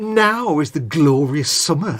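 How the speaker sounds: slow, scornful, disdainful delivery. Showing how the Shakespeare line should be said: said with disdain. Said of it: "said with some disdain".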